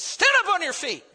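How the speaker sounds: loud commanding voice. Retelling the preacher Paul's words to the crippled man: imitating a loud command. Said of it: "With a loud voice".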